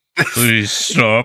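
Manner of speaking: loud, gurgly, burbling creature voice. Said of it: "in this kind of blurberly voice".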